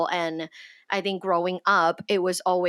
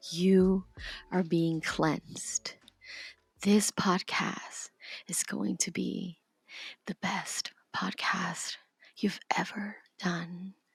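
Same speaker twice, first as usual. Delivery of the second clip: gentle, calming ASMR voice; 7 dB quieter than usual. Podcast host pretending to cleanse the others with a selenite wand, in an ASMR voice. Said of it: "A S M R voice".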